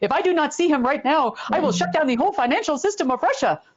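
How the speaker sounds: put-on German accent. Retelling a man's scream at the hotel: imitating a german accent. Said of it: "my best German accent".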